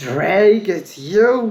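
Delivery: loud, shrill, startled, furious outburst. Reading a story, Tenant recognizes Drake after he greets her: furiously angry and surprised. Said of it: "furiously angry and surprised voice".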